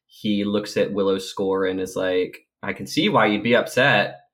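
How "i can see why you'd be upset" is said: put-on sarcastic tone. Speaker quotes a show character's line, mock-sarcastic. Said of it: "that was my sarcastic voice".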